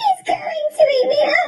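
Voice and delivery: very high, terrified crying wail. Narrator voicing Grandma as Wolfie comes to her door, crying out in terror. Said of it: "she cried".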